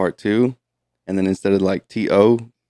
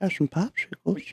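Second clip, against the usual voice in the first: put-on breathy, whispered old man rasp; 11 semitones higher, 10 dB quieter than usual. Describing a cartoon character to the other speaker: Family Guy old man voice. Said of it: "Remember the old man that was on it? He's like".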